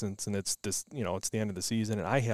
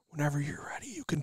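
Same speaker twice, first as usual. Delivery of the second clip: hushed, soft, pitched-up whisper; 5 semitones higher, 3 dB quieter than usual. Retelling leaning over her shoulder before the shot: imitating own whisper. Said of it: "I kinda whisper in her ear".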